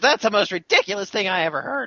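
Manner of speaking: put-on very high, childish little girl voice, scoffing. Voicing the little girl before she storms out: little girl voice. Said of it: "She says".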